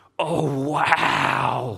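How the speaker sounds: Canadian-sounding voice. Recalling hearing a housemate through open windows one summer night, imitating Sophia's Canadian accent. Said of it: "I just hear this Canadian voice go".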